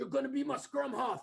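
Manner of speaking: put-on South African accent. Retelling what a friend's father said to the speaker at ten: south african accent. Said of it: "South African accent said".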